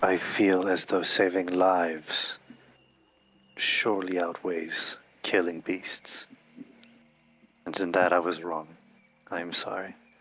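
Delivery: whispering in a put-on character voice. Apologizing quietly to another character in a roleplay scene: whispering in character. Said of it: "And in a whisper, specifically a whisper".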